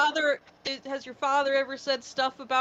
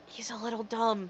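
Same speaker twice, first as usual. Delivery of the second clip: hushed, whispered aside; 6 dB quieter than usual. In a tabletop game, hand on a companion's shoulder, the character is whispering. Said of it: "I whisper to him".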